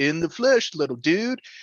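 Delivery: put-on laid-back surfer dude voice. Retelling a game scene, voicing Skid McMarx: surfer dude voice. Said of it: "Surfer dude".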